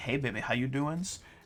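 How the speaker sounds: lustful, seductive voice. Voicing a lustful voice heard inside the fiendish jelly: lustful voice. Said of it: "like, lustful, like".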